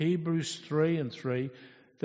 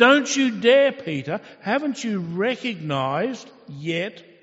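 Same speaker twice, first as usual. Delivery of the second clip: emphatic, frustrated tone with raised voice; 4 semitones higher, 7 dB louder than usual. Retelling God's words to Peter, acting out God's frustration. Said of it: "You can almost hear the frustration".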